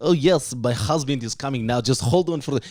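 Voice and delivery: put-on speaking with a Bulgarian accent. Retelling what a lady said to the delivery guy, imitating a Bulgarian accent. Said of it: "she's like Bulgarian accent".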